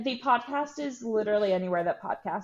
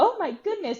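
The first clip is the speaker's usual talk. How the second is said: very high, dainty princess voice; 12 semitones higher, 4 dB louder than usual.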